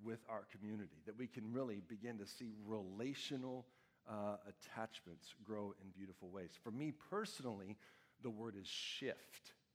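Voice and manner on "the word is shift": deliberate, slow, drawn-out delivery. Speaker names a personal word to the audience, saying it slowly. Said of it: "I get to say it slowly every time I say it".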